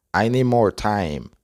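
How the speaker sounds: plain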